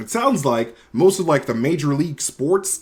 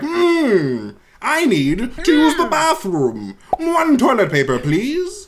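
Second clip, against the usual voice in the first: very high, la-di-da, fancy voice; 10 semitones higher, 4 dB louder than usual. The speaker demonstrates the voice they occasionally slip into: a fancy voice. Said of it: "go into like a fancy voice like".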